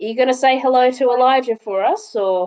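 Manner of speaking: put-on heavily Australian-accented voice. Voicing Bluey as she leaves the area, Bluey shouting with an Australian accent. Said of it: "Bluey's gonna say very loudly".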